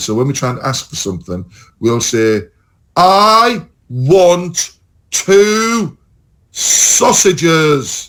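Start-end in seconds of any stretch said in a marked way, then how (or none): 3.0-8.1 very slow, loud speech. Showing how English people abroad ask for things: imitating English tourist, slow and loud. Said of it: "we talk slower and louder".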